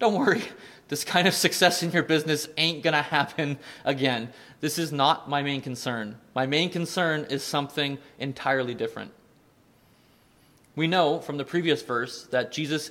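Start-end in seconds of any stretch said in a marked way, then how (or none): none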